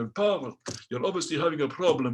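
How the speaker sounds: put-on Russian accent. Retelling what a Russian instructor said during lessons, in Alyosha's Russian accent. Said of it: "This is a Russian accent now".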